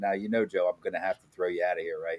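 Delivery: quick, quiet whisper. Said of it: "he, he whispers in my ear".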